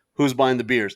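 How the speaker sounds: ordinary delivery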